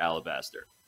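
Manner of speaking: low, quiet, somewhat menacing voice.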